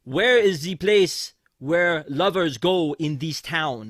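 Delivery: loud, crudely exaggerated fake French accent. Getting into the car, he leans up to the guy in front: offensive French accent. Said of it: "says in the most offensive French accent".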